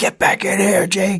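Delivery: put-on very high-pitched, shrill yell. Telling how they had to call out at 2 a.m., retelling a yell. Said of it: "I'm yelling".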